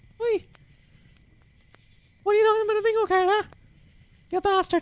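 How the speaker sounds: very high, squeaky Irish accent. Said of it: "Irish Mickey Mouse".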